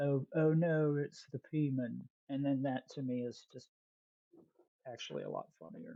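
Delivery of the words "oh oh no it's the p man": British accent, very slow and drawn out. Explaining a joke name to another speaker, in a British accent. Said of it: "you say it in a British accent".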